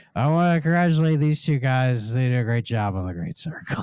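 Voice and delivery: put-on, drunk-sounding voice. Retelling an actor's award show message: Harrison Ford sounding drunk. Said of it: "he kinda sounded drunk, where he's like".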